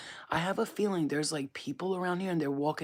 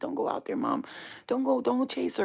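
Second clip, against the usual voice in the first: frightened, scared pleading, pitched up; 8 semitones higher, 4 dB louder than usual. Retelling what her scared daughter said to her, imitating scared daughter pleading. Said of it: "my daughter's so scared".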